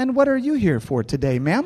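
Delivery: syrupy sweet voice. Retelling how someone greeted them, in a mock saccharine corporate voice. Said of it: "corporate kind of saccharine voice".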